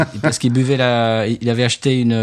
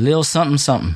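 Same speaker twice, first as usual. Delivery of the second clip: native-sounding American English accent; 3 semitones higher than usual. Saying an English title in the original version: American English accent. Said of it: "je vous le fais en VO".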